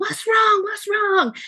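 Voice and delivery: mock screaming, very high-pitched. Retelling how a friend's dad opened the door: imitating a dad screaming. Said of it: "he's screaming".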